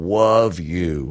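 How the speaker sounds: put-on cartoon hunter character voice. Describing how he sometimes says it, doing it in an Elmer Fudd voice. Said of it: "like Elmer Fudd".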